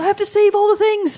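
mock delivery, high, loud, with a laugh.

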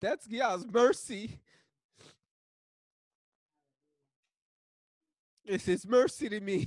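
high, loud crying, words coming out through tears. A man talking about his son, his marriage and his wife, crying. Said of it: "Part of the reason why I'm crying".

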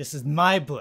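spoken with open disgust. Narrating, the speaker voices Amelia taking the book back from a player: disgusted. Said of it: "she stares at you in disgust. And she's like".

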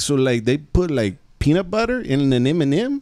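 incredulous, disbelieving street-tough male voice.

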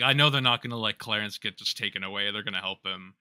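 ordinary delivery

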